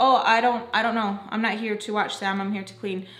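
ordinary delivery

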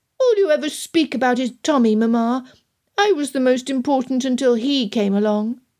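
high, petulant, whiny voice. Lydia answers her mother after being told to hush, whining. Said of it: "Lydia whined".

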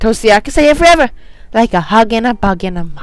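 put-on, childlike little girl voice. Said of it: "I'm trying to get like a little girl voice".

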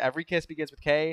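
ordinary talk

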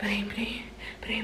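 soft, unvoiced, urging whisper.

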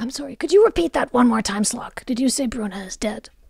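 soft, quiet, careful, discreet voice. In a role-play, a character pulls a player aside and asks quietly.

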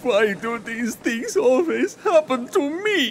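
put-on crying and sobbing like a baby. In a drama, a character asked what is wrong answers, crying like a baby. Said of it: "You're crying like a baby that's lost its teddy bear".

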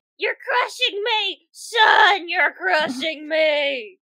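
put-on low, slow chameleon familiar voice. In a tabletop game, being piled on by an owlbear, playing the chameleon familiar. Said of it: "and I play [name] the Chameleon".

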